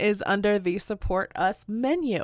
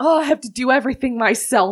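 irritated, annoyed, angry, fed-up voice; 2 semitones higher, 6 dB louder than usual. Voicing Harold as he steps forward to attack: angry. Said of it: "He gets pretty angry".

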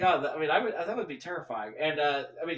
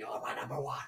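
put-on old actor voice, lower and quieter; 5 semitones lower, 8 dB quieter than usual. Recalling a childhood impression of a film actor: Jack Palance impression. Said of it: "I used to do impressions of him".

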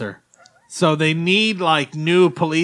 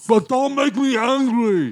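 high, laughing, mock tough-cop voice, badly done. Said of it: "That's my Lou Ferrigno impersonation".

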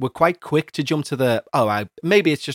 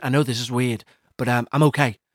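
put-on ghostly whisper. Acting out a ghostly nan visiting in the night: put-on ghostly whisper. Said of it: "Sorry for whispering".

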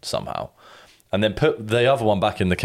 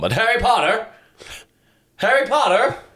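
very high, odd put-on Irish accent; 13 semitones higher than usual. Show a fellow viewer how an actor's accent varies in a film, imitating a weirdly irish accent. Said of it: "that's when he goes weirdly Irish".

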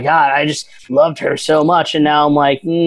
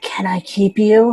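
mock whisper, higher; 6 semitones higher than usual. Quoting what he whispers in her ear: imitating a whisper. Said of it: "he whispers in her ear".

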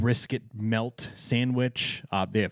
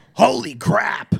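very high, loud, rasping yell; 11 semitones higher, 8 dB louder than usual. Reacting to a lunch menu: Alex Brightman Beetlejuice voice. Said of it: "my best Alex Brightman Beetlejuice impression".

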